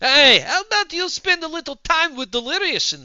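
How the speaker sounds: put-on, acted-up vampire-style voice. Speaking to the other person in the conversation, in a vampire voice. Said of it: "I sound like a vampire".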